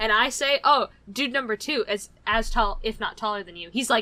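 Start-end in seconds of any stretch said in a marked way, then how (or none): none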